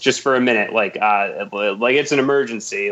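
ordinary talk

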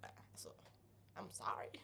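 whispered, timid, apologetic tone. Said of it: "hon bara stod där".

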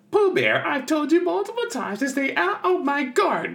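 very high, squeaky cartoon voice with big pitch swoops. Listing Winnie-the-Pooh characters, the speaker does a Rabbit voice. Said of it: "He's like".

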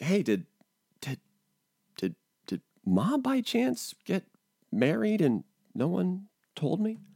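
acted whispering. Retelling a question whispered to one of the kids mid-conversation, retelling a whisper. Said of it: "I had to whisper to one of the kids".

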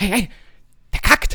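high, baffled, perplexed, blurted outburst. Retelling his own reaction at a motorway rest stop toilet: retelling a perplexed exclamation. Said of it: "da war ich so perplex".

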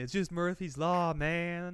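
put-on relaxed, mellow stoner voice. Imagining a movie character as a regular stoner, stoner Matthew McConaughey impression. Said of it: "regular stoner ass Matthew McConaughey".

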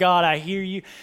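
put-on crying. Telling a story about being a wreck and reenacting their past self: retelling their own crying. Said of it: "I'm just crying like".

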